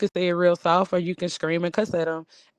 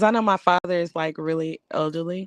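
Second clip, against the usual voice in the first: ordinary delivery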